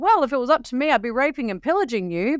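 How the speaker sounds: put-on light, jokey, throwaway delivery. Retelling what a man said to the group, imitating his joking voice. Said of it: "in a joking voice".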